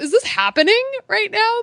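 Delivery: high-pitched, amazed disbelief.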